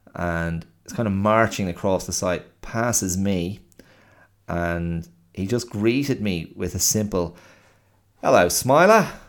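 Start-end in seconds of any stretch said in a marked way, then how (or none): 8.2-9.1 loud attempted London accent drifting into Australian. Retelling a man's greeting while passing on the site: attempted London accent, sounds Australian. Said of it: "That was meant to be London".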